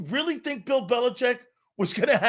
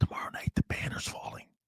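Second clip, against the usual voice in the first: very quiet, secretive, barely voiced hushed whisper. Passing on something they are not allowed to say, whispered. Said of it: "We got to whisper this".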